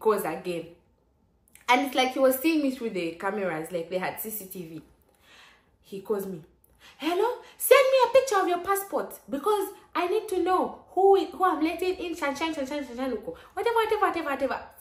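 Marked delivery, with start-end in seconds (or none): 7.0-14.6 put-on shouting, higher and louder. Retelling a caller demanding a passport picture: imitating a caller shouting. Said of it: "Why are you shouting?".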